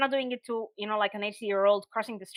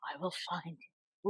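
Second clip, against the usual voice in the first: fast, close whispered voice; 3 semitones lower, 9 dB quieter than usual. Reacting to a story about a threat: Liam Neeson voice. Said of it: "Liam Neeson style".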